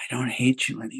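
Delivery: whispering. Retelling a hug, quoting what he whispered in the speaker's ear, a retold whisper. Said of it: "he whispers in my ear".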